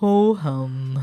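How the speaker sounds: put-on cartoon donkey voice, sighed out. Describing how someone talks, doing an Eeyore voice. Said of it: "I think she talks like Eeyore".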